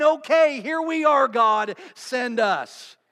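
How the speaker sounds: mock shouting, acted out. Speaking of answering god's call, retelling a shout. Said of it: "And we're shouting".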